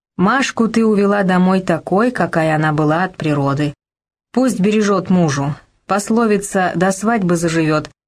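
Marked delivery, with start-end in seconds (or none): none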